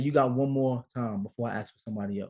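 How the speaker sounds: ordinary delivery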